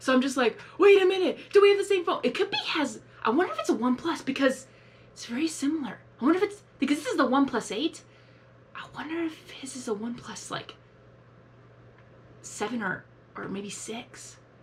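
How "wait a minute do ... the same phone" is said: high, loud, freaked-out cry. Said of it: "So that's why I freaked out".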